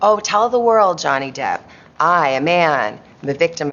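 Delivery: ordinary talk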